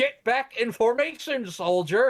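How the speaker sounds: high-pitched yelling. Retelling a Superboy scene where a colonel orders a soldier, imitating someone yelling. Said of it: "yelling at".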